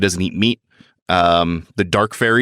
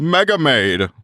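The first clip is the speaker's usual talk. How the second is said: put-on fifties cartoon announcer voice, pitched up; 7 semitones higher than usual. Joking while recapping a story plot: put-on 1950s cartoon announcer voice. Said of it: "a nineteen fifties cartoon announcer voice".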